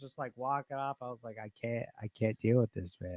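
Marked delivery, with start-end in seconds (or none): 1.4-3.2 pissed-off, exasperated, fed-up, angry outburst. Retelling own words after finding a dead snake: retelling being pissed off. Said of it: "I was so pissed".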